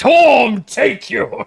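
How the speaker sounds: very high, shrill, loud righteous yell. Acting out a paladin punishing a thief: yelling as a zealous paladin. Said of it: "I'll just yell".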